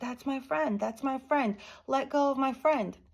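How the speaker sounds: put-on high, desperate child's scream. Recounting running to grandpa as a child: retelling a scream. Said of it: "I go running to my grandpa screaming".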